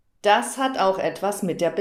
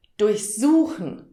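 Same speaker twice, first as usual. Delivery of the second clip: durchsuchen with stress on the second syllable su; 2 semitones higher than usual. German lesson on inseparable prefixes, stress on second syllable su. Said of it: "Die Verben werden betont und deshalb wird die Vorsilbe nicht getrennt".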